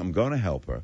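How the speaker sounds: usual speaking voice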